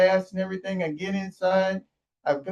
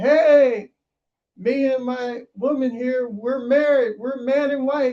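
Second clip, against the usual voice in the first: mock high, drawn-out hollering yell; 5 semitones higher, 3 dB louder than usual. Retelling announcing a new marriage at a drive-through: imitating own past yelling. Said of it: "I was yelling at everybody".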